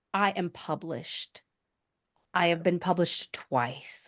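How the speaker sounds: low, slow, soft delivery with conviction. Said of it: "I want to hear you say".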